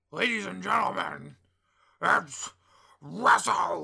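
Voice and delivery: very loud rough yell. Opening the talk about WrestleMania weekend: Vince McMahon voice. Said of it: "Vince McMahon voice".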